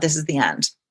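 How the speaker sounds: hushed, very soft female voice. Retelling a voice heard while getting ready to sleep: imitating a soft voice. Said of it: "that just said very kind of softly".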